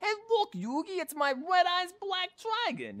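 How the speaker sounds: put-on New York accent. Recounting a student's remark, the speaker redoes a Joey Wheeler line in a ridiculous New York accent. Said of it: "I'll slip into a really ridiculous New York accent".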